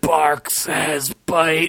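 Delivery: groaning, orc-like monster voice. Narrator reads the orc's line as the virus takes hold of him, groaning. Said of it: "groaned the orc".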